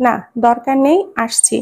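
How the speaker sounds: ordinary delivery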